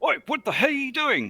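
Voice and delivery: very high, shrill, angry yelling shout. A checkpoint guard yells as the players' vehicle speeds toward him. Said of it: "the one in the middle yelling".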